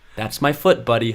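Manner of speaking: gentle, knowing, tender, wise voice. Retelling the first time they met, imitating Isaac's wise, tender voice. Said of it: "in his very wise and tender voice".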